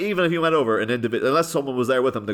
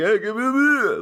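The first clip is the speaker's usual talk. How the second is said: put-on drunk-sounding voice, higher pitched; 9 semitones higher than usual. Voicing a character ordering a beer at the bar: Stallone impression. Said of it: "Stallone impression".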